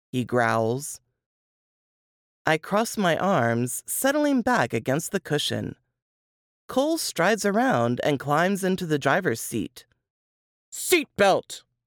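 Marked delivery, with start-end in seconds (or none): 10.7-11.6 sharp, bitten-off one-word snap. A man climbing into the driver's seat, to the passenger beside him: snapping. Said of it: "He snaps".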